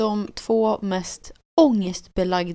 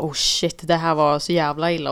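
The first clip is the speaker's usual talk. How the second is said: usual speaking voice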